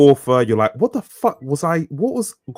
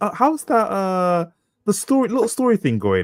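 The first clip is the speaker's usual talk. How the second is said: mock talking-down, belittling, patronizing tone; 6 semitones higher than usual. Describing how people ask about the speaker's writing, mocking a condescending tone. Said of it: "But it's the condescending".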